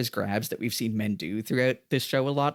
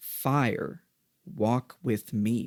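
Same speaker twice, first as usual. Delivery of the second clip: put-on incantation-like, invocation-style delivery. Retelling a character staring into a fire: imitating an invocation. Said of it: "he says it like an invocation".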